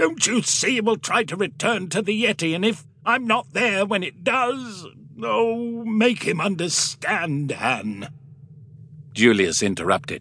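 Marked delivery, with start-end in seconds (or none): 0.0-8.1 angry, insistent urging, pitched up. The father turns back toward the other man and speaks, angry. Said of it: "He turned angrily back towards Julius".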